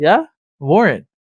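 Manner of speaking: mock-sarcastic, acted-out sarcastic tone. Retelling answering a man who brought up a warrant, retelling a sarcastic reply. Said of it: "Part of my anger is I get very sarcastic".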